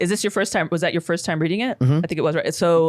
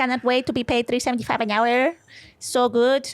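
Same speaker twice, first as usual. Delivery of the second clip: bad put-on Filipino accent, pitched up; 7 semitones higher than usual. Speaker imitates a Filipino cashier, in a bad Filipino accent. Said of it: "I think that's a bad Filipino accent".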